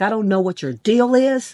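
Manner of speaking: put-on angry, fed-up, really mad voice. Retelling how a girl reacted to kindness: imitating someone getting mad. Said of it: "She got really mad".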